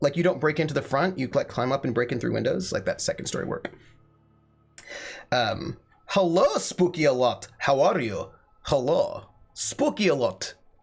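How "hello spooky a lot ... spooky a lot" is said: Soviet-style Russian accent. Weird voices coming out of him, the speaker greets in a put-on Soviet accent. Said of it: "why I just got Soviet right now".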